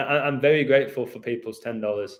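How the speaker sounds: ordinary talk, nothing marked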